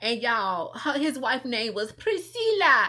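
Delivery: ordinary talk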